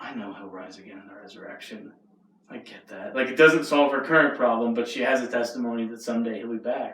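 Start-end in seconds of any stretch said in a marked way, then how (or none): 0.0-1.9 mock hushed, very quiet, sorrowful and mournful delivery. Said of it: "such a mournful roll of the eyes".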